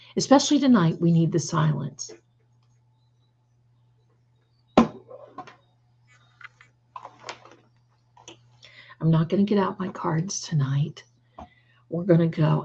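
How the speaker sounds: soft, hushed whispering voice. Telling listeners they need silence tonight, whispering.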